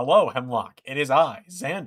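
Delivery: loud, robot-like voice. Imagining a killer wearing Xander's skin greeting Hemlock, in a robotic Xander voice. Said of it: "The mo- the most robotic possible Xander voice".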